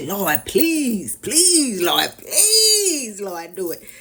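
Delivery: drawn-out, swooping, begging tone. Showing how people keep asking god: imitating someone begging god. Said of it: "keep coming back like".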